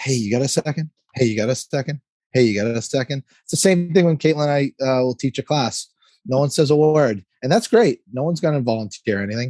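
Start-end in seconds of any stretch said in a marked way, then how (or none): none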